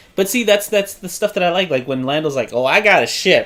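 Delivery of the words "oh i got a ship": cocky, show-off, boastful tone. Retelling a movie scene, quoting the character Lando: cocky Lando voice. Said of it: "he's all cocky about it".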